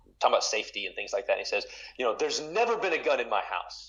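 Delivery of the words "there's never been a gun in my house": emphatic, high, loud, exclamatory pronouncement. Retelling a line from a sermon by Piper: imitating Piper's loud exclamation. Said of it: "in a loud exclamatory voice".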